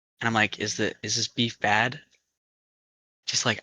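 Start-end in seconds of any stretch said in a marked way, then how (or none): 0.6-2.0 put-on whisper. Retelling a late-night phone call, imitating own whisper. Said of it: "trying to whisper".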